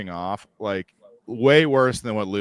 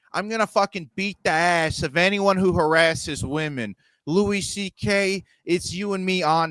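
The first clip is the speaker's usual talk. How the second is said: put-on, pitched-up Boston tough-guy accent, blustering; 8 semitones higher than usual. Describing a man who talks tough about harassers, doing a boston tough-guy impression. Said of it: "like a Boston tough guy".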